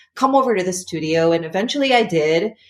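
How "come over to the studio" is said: usual speaking voice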